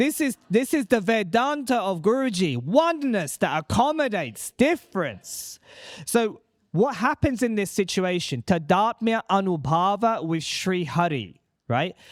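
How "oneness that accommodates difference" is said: passionate delivery, higher pitch. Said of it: "Say it with such passion".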